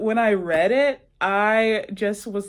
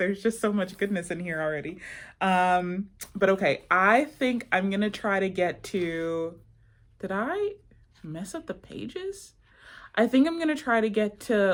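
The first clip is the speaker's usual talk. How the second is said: normal talking voice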